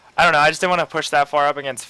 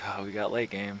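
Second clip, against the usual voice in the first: very hushed, dry, sarcastic mutter, acted out; 5 semitones lower, 12 dB quieter than usual. Retelling what was said to oneself during a game: retelling a sarcastic remark. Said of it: "sarcastically to myself".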